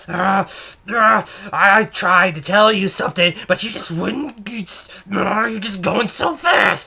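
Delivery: put-on frantic voice with panicked stammer. Retelling a checkout lady's stammering reply: imitating a frantic customer. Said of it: "this is exactly what she sounds like".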